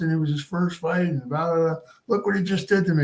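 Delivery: put-on high-pitched yell. Retelling a beaten fighter after the fight, retelling a yell at his manager. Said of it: "he's yelling at this guy".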